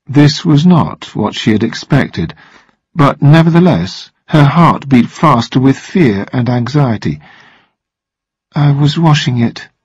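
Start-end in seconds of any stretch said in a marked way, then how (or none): 8.6-9.7 weak, feeble, faint voice. Narrator voicing a woman answering a captain's accusation, weak. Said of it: "she said weakly at last".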